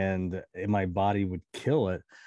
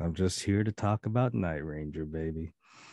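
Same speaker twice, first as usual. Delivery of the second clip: deep, sexy announcer voice, lower pitch; 3 semitones lower than usual. Showing off the voice he gets on the show, deep sexy Allstate voice. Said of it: "sexy Allstate voice".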